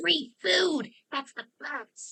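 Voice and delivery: loud stage whisper. Voicing a character who is trying to be funny: whisper yell. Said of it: "whisper yell is just her trying to be funny".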